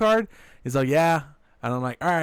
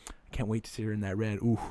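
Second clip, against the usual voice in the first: very soft, hushed, teasing, playful half-whisper; 7 semitones lower, 9 dB quieter than usual. Retelling leaning over during a movie: retelling a half-whisper. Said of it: "I lean over to her and I whisper to her".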